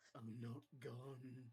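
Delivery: whispering. Voicing a whisper heard in a character's mind: whisper. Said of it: "you hear a whisper in your mind".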